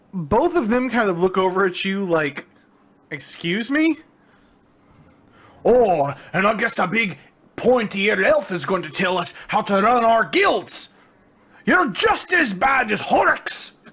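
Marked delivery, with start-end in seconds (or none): 3.1-13.7 argumentative dwarf voice. A game master voices a dwarf arguing with town guards and an elf; loud arguing dwarf voice. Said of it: "you see a small group of dwarves kind of standing there like this and arguing with some of the town guard. / and the dwarf is getting louder and louder and louder".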